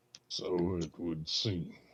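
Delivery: deep put-on character voice. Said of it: "I'm not gonna do the deep voice anymore".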